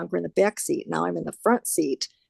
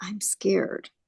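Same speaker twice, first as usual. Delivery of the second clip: soft, very quiet, hushed, under the breath; 4 dB quieter than usual. Retelling words said on the phone to a husband: retelling saying it really quietly. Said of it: "also really quietly".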